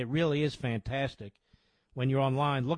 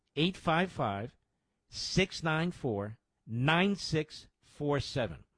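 slow, unhurried delivery; 2 semitones higher than usual. Speaker repeats a donation phone number for listeners, saying it slowly. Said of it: "Let me say that slowly".

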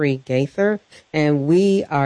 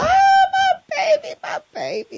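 mock sobbing, much higher, slower. Parent retelling flinging themselves on a son's bed, retelling own sobbing. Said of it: "just sobbing in his bedroom".

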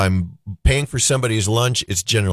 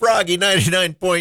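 prim put-on voice, pitched much higher; 10 semitones higher than usual. Saying the station name on air in a Church Lady voice. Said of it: "I sound like the church lady there for just a minute".

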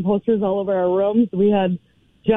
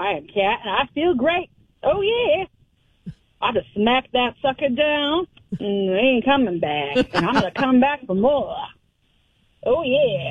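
fake Southern drawl throughout; 4 semitones higher than usual. Playing a wrestler who just won a first match, put-on southern accent. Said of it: "I got a Southern accent".

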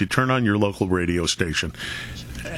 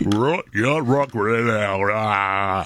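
big radio DJ voice, slower. Imitating a satellite radio host with a weird voice: big radio voice. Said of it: "Ron Radio with the big voice".

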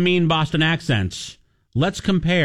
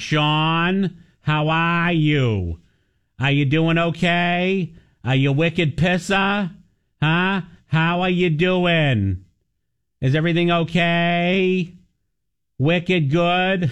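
put-on Boston accent, very slow, okay stretched. Imitating mother's greeting on the phone: imitating mother's Boston accent. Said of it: "My mother still has it. She's like".

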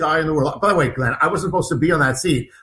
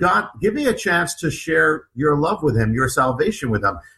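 ordinary talk

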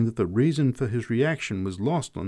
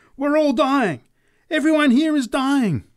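very high, sudden, loud shrieking scream; 6 dB louder than usual. A woman preaching from a box suddenly raises her voice: screaming. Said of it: "she raised her voice to a scream".

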